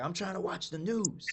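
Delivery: play-acted yelling. Retelling being sent to practice saxophone in the closet: imitating mom yelling. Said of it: "she'd be yelling at me like".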